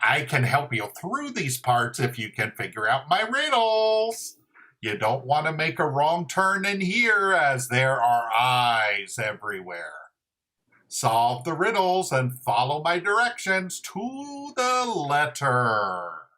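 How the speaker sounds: storybook goblin character voice. Narrating an adventure for kids, speaking as the hooded goblin in a goblin voice. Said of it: "the goblin says".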